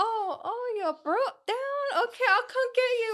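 put-on rez Navajo accent, pitched very high. Retelling a dad's joke about Breaking Dawn: imitating dad in rez Navajo accent. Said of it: "it's like Resi Navajo, um, talk".

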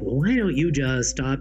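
put-on preachy, know-it-all, judgmental, dismissive tone. Describing advice people give, imitating a judgmental tone. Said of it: "with kind of a judgmental tone of voice".

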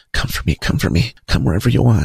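put-on whisper. Retelling words whispered in one's ear: imitating a whisper. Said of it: "She's whispering in my ear".

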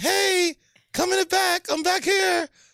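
put-on very high, slow, drawn-out young-kid voice. Showing another speaker how to play a thirteen-year-old kid: put-on kid voice. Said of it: "be the little thirteen-year-old kid".

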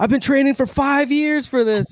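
very high, shrill scream. Retelling what a friend screamed as a man fell back, retelling a friend's scream. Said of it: "my friend just screamed out".

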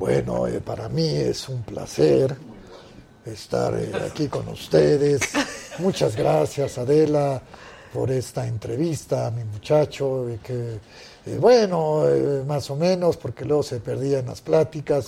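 low, dropped voice. Answering a request to imitate his father: El Santo impression. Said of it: "A tu papá primero".

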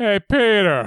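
put-on mildly excited cartoon voice. Trying a mildly excited Joe voice for the podcast: mildly excited Joe voice. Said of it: "I can do mildly excited".

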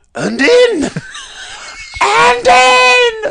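very slow, very high, drawn-out commentator scream of "in". Retelling a commentator's call of a winning field goal: imitating a commentator screaming. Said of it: "then screamed it a second time".

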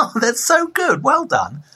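high-pitched, gushing, patronizing tone.

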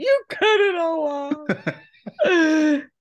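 play-acted devastated wail, very high and loud. Retelling a little girl's reaction to a haircut, imitating a little girl crying. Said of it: "she cried".

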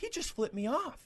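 imitated woman's scream. Retelling how a lady in the stands started screaming: imitating a lady screaming. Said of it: "she just starts screaming".

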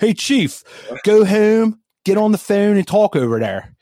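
put-on Philadelphia accent. Imagining how a Philly-area actor would have said the line, in a put-on Philly accent. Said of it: "that's the Philly accent".

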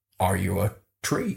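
bad, rough and creaky voice. Imitating a public figure asking a question: terrible Jordan Peterson impression. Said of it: "Terrible impression".

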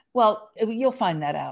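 condescending, patronizing, talking-down brush-off tone. Retelling a woman's answer about how to get the car, mock-patronizing tone. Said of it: "she very patronizingly said".

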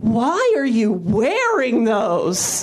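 very slow, drawn-out, disappointed, let-down tone. Retelling what a girl asked at school, imitating a disappointed teacher. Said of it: "she sounded like a disappointed teacher".

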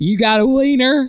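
put-on casual, thick, heavy Southern US accent. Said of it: "asked in a heavy, heavy southern accent".

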